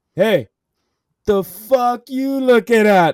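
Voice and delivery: booming, very loud, slow, drawn-out, hostile and angry. Retelling a friend in the passenger seat confronting some guys, imitating Jordan's angry tone. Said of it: "Like all like in that tone".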